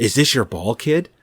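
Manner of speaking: creepy, unsettling voice. Retelling the best film line to another speaker: creepy Richard Jordan impression. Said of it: "I think he actually said".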